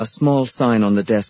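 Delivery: plain reading voice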